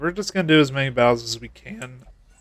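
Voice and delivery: cracking voice. Talking through a game session, voice cracking. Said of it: "voice crack".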